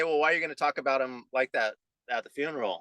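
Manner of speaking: usual speaking voice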